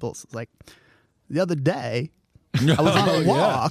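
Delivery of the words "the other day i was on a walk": put-on voice stretching out one-syllable words. Showing a bad impression using a comedian's tip: shitty Walken impression. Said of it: "my really shitty impression".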